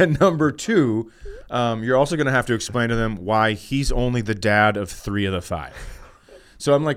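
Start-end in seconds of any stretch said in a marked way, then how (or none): none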